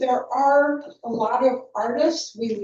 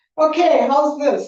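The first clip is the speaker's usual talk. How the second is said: quick, raised voice; 4 semitones higher, 5 dB louder than usual. Asked to speak up because of the listener's hearing aids, speaking louder. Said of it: "That's much better".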